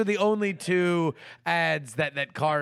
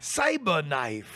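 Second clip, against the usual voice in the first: put-on Jamaican accent. Repeating a horse's name, put-on Jamaican accent. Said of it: "Did I detect a little bit of an accent there?".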